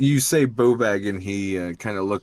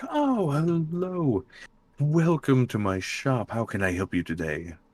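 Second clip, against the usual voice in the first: warm, friendly, bubbly, sing-song voice; 5 semitones higher than usual. A game master voices a half-elven man greeting customers in his shop, bubbly, warm, friendly. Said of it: "he's very bubbly and warm and friendly".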